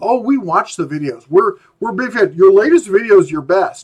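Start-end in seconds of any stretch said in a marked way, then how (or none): none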